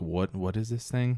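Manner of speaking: ordinary delivery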